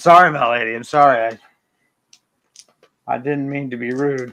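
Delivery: sheepish, apologetic goblin voice. Voicing a goblin apologizing to a lady: apologetic goblin voice. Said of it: "covers his mouth and is like".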